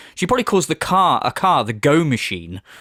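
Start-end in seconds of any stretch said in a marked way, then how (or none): none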